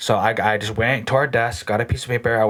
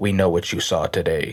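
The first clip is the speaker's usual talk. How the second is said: low, flat, level, inhuman-sounding droning monotone; 5 semitones lower than usual. Retelling what the men at the window said: imitating a monotone voice. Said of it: "their voices sound, like, monotoned, like, like this".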